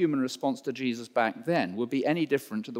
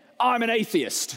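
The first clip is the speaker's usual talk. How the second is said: put-on piercing, very high-pitched, shrill old-lady shout; 10 semitones higher, 4 dB louder than usual. Retelling an old lady in a tour group outside St. Helens, retelling a shout. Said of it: "shouts one old lady".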